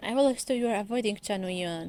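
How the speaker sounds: ordinary talk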